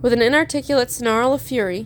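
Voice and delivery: ordinary delivery, nothing marked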